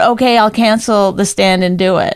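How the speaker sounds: ordinary delivery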